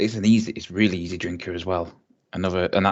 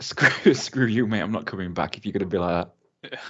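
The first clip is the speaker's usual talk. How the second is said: ordinary delivery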